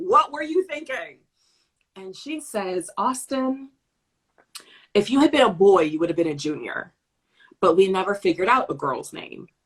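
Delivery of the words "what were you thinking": high, totally annoyed, exasperated tone. Retelling confronting her mother about her name, retelling being totally annoyed. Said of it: "Just totally annoyed".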